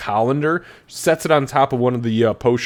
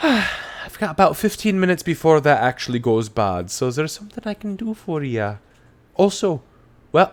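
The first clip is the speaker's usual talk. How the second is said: put-on woman's voice, higher; 4 semitones higher than usual. Voicing a potion-maker who greets a visitor: voicing a woman potion-maker. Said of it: "And she says".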